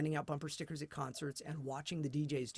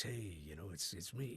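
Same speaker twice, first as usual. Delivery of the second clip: put-on night radio DJ voice, very deep, soft; 8 semitones lower, 6 dB quieter than usual. Former overnight DJ shows how he sounded on air, in his big DJ voice. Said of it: "you put on your big voice".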